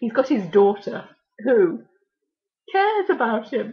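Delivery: tearful, choking-up voice on the verge of crying. Speaker recalls a man whose daughter told him not to worry, on the verge of tears. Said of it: "oh my God, I shall cry".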